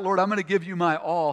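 ordinary talk, nothing marked

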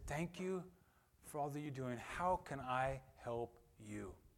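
gentle, very quiet, hushed voice. Retelling a big man thanking a young woman: imitating a soft voice. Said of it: "he came up to her in a soft voice and said".

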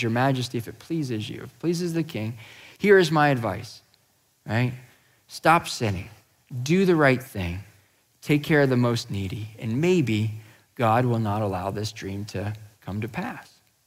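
ordinary talk

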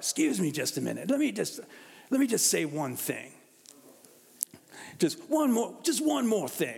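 put-on raspy voice. Describing a tv character's signature interruption, doing his raspy voice impression. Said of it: "He's got this raspy voice".

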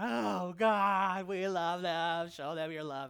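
very loud, drawn-out, acted ugly crying. Retelling a teammate's prayer at a prayer meeting: imitating someone crying out in prayer. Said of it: "she's just crying out".

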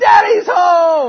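very loud, very high shout, "home" drawn out. Telling a story about a homecoming and the little one's reaction: retelling a shouted proclamation. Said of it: "shouts out the proclamation".

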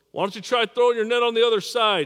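loud, high yell. Retelling a stranger calling from the shore to fishermen: imitating someone yelling. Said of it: "some dude yells".

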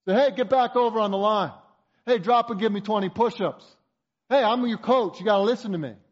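play-acted coach voice, hollering loudly. Speaker acts out Coach Sin at practice, imitating Coach Sin yelling. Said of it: "he starts yelling at you on the sidelines".

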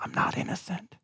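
soft, barely audible whisper. Speaker acting out believers replying to their advocate in the courtroom, whispering. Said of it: "And we whisper back to him".

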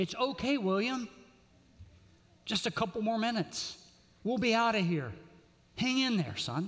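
steady, even-tempered, calm, controlled voice. Retelling a store story, doing the grandfather soothing the screaming kid in a controlled voice. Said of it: "says in a controlled voice".

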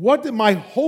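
ordinary talk, nothing marked

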